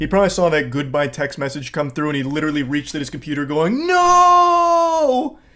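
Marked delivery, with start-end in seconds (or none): 3.9-5.3 very high, drawn-out, over-the-top dramatic wail. Imagining someone reaching at his computer: mock dramatic movie death-scene cry. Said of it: "Like some kind of dramatic death scene in a movie".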